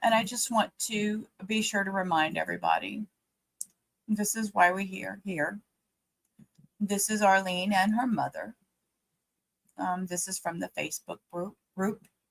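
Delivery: choked-up voice catching with emotion. Livestream host reminding everybody why they're here: choked up. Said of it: "Sorry, I'm getting choked up again".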